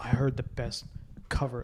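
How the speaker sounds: whispered, soft and hushed. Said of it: "just goes like".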